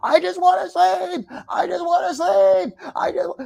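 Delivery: high, raspy, creaky, rough scream, repeated over and over. Retelling what a woman screamed at him, imitating her screaming. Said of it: "what is she screaming".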